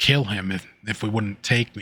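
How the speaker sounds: ordinary delivery, nothing marked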